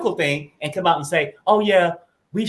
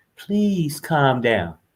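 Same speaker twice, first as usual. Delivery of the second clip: whispering, much lower pitch; 5 semitones lower than usual. A parent at a shopping store talks to their kid, retelling a whisper. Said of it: "you whisper".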